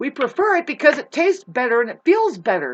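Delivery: very loud, high yelling. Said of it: "I'm yelling now".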